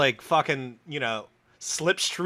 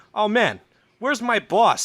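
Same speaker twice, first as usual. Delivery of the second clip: put-on New York accent, higher and slower; 3 semitones higher, 4 dB louder than usual. Telling a joke, voicing the boss's secretary on a private plane, New York accent. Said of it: "I don't know why his secretary's got a fucking New York accent".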